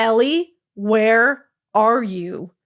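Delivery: gravest, dead-serious motherly voice, no joking. Retelling her mom's phone call, imitating her mom's very serious tone. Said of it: "in the most serious tone I've ever heard".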